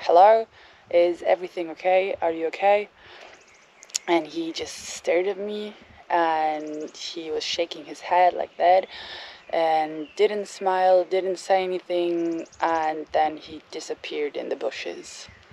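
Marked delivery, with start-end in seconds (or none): 0.0-2.9 acted-out loud, firm, assured, certain tone. Recounting calling out to a man standing ten meters away, retelling a certain, loud call. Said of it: "in a very certain and loud voice".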